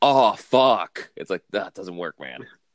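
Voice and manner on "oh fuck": snide, sarcastic, acted-out throwaway tone, raised, pitched up. Mocking how movies drop the F-word: imitating a sarcastic curse. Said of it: "but you said it, like, sarcastically".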